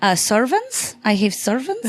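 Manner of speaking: put-on heavy Greek accent laid on thick, slow, swooping. Retelling how a man answered her question, in a thick greek accent. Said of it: "he has this very thick Greek accent".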